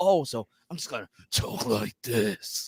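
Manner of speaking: slow voice sounding like damaged, ruined lungs. Retelling how an actor answered a voice request: imitating damaged-lungs voice. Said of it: "I want you to sound like your lungs are damaged".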